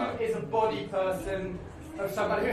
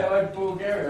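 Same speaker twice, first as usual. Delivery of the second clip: usual speaking voice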